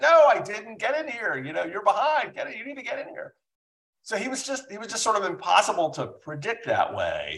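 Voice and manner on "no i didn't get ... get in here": mock screaming, much higher pitch. Speaker retells a judge calling after firing them, retelling a judge screaming. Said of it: "he'd be screaming".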